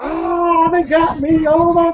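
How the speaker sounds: stretched-out, very high, very slow scream. Retelling a companion whose shirt snagged on a tree: imitating someone screaming. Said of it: "he starts screaming".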